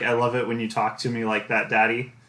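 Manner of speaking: plain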